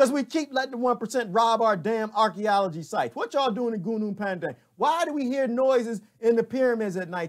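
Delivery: furious, angry rant, very loud and very high. Ranting about archaeology sites and the one percent: yelling in anger. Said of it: "I know I'm yelling".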